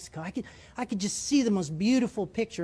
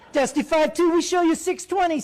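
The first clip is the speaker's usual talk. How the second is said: put-on gleeful voice, much higher and louder; 9 semitones higher, 7 dB louder than usual. Retelling what the controller said, imitating a gleeful controller. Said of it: "a little glee in the controller's voice".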